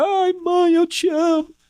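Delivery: anguished, desperate, very high, stretched-out wailing cry. Telling brothers about someone crying out at a mother's coffin, imitating a desperate scream. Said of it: "a pessoa vai ficar lá gritando, desesperada".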